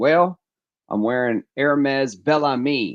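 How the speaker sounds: put-on, laid-on Texan accent. Retelling answering a woman at a gas station: put-on texas accent. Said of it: "but on the Texas accent".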